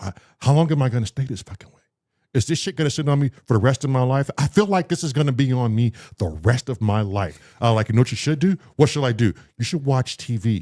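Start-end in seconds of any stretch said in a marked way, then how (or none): 0.0-4.3 put-on panicky, freaking-out, spiraling worried voice. Retelling being high and stuck, imitating own past panic. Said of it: "And I'm panicking like".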